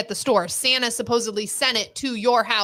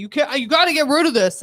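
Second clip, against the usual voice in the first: mock raised, scolding holler; 3 semitones higher than usual. Retelling how he yelled at the speaker: imitating someone yelling. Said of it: "now he's yelling at me".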